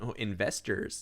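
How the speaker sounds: put-on American accent. Retelling turning around and announcing investors, in an american accent. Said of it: "in an American accent".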